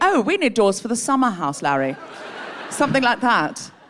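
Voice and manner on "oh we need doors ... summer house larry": put-on upper-crust posh delivery. Acting out posh people asking for doors: put-on posh voice. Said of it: "I need one or two posh people to say".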